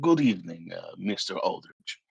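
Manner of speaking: put-on Russian-accented voice. In a role-play scene, a character greets another character, in a Russian accent. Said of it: "I slipped right back into that Russian accent".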